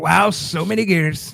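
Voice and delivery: very slow, creaky, rasping, each word drawn out. Riffing on gears with the others: Donald Trump impression. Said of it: "It's so fun to do his voice".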